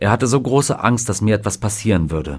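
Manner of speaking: ordinary talk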